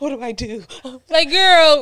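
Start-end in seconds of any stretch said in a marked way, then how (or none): 0.0-0.6 high, flustered, panicky delivery. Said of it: "Tasha poker face be horrible".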